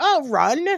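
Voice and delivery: high, loud, sarcastic throwaway wisecrack. Retelling own reply to friends asking what to do: imitating own sarcastic remark. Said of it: "me being the sarcastic ass I am".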